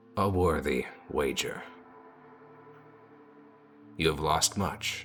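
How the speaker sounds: deep guttural gurgling voice. Narrator voices a cackling corpse speaking to the player, deep guttural gurgling voice. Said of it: "that deep sort of guttural gurgling sound".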